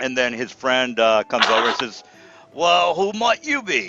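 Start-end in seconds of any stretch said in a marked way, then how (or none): 2.5-3.9 pitched-up British bad-guy villain accent. Narrating a scene, the speaker voices an orc's friend in a British accent. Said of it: "they all talk British".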